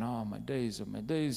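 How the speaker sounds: ordinary talk, nothing marked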